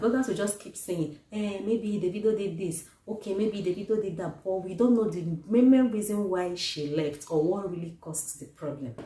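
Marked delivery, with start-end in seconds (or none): none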